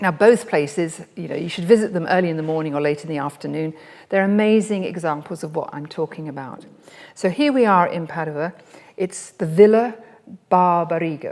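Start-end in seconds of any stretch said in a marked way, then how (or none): 9.0-11.3 loud, bad, unkind put-on Italian accent. Speaker introducing a garden in Padua to the audience, in a bad Italian accent. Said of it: "not a very nice Italian accent there".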